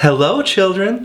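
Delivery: sugary, sweet, very high and gentle. Reading a story; a returning woman greets the children, in a sweet voice. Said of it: "someone said in a sweet voice".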